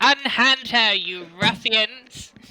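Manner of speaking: very slow, high, drawn-out grand heroic shout. Confronting the ruffians holding a girl in the game: shouting in character. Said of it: "I'm going in and I'm going to shout".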